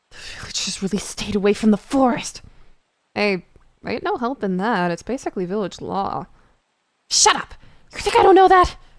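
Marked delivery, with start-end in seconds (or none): 7.1-8.8 agitated, angry shout, high-pitched and loud. Snapping back at someone citing village law: agitated shouting. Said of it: "Please calm down".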